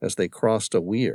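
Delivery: ordinary delivery, nothing marked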